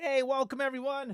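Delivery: breaking, high voice. Just going live, greeting everyone watching the stream; voice cracking. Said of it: "My voice just cracked".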